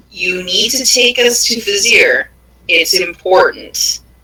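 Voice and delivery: stern, no-nonsense, very firm commanding voice. Demanding that a woman take the party to Vizier: very firm voice. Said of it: "in a very firm voice".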